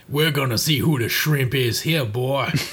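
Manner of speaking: put-on Cajun accent. Going through Mega Man bosses, imagining Volt Catfish taunting Mega Man, Cajun accent. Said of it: "unless he's got a Cajun accent".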